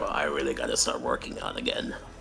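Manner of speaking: low muttered half-whisper under the breath. Narrating a game scene, a character notices his waistline growing: half-whispered under his breath. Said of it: "he kind of whispers under his breath".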